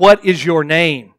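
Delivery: booming, very loud, repeated delivery. Narrator reads a ruler repeating a question to a soldier, loudly.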